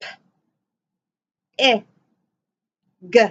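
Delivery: slow, each letter sound spaced apart. Showing learners how to segment a word's sounds: sounding out slowly. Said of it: "Say them slowly".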